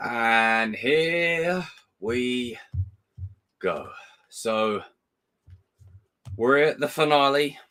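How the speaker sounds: slightly croaky, sleepy, just-woken voice. Speaker opens the finale, apologizing for their voice, croaky morning voice. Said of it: "my voice sounds a bit croaky".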